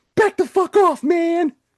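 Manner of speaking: put-on very high, loud four-year-old child's yell.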